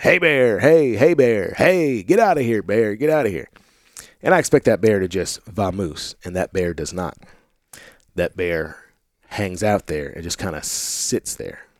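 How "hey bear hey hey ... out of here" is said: string of yelled, hollered calls. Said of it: "I start hollering".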